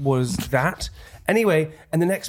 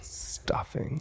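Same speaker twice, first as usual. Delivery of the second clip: sexy, seductive voice, much quieter. Reading food names to a listener whose eyes are closed, sexy voice. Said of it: "I want to hit like a sexy voice".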